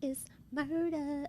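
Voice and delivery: slow, soft put-on voice.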